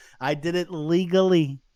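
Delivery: legally hit hard and leaned on. Showing that emphasis on a word means it's true, heavy stress on legally. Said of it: "When you say that word with a lot of emphasis, that means it's true. Listen to the way I say it".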